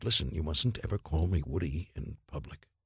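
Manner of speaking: put-on serious tone. Recounting a meeting, the speaker quotes what the man he met told him: retelling a very serious remark. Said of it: "he said to me very seriously".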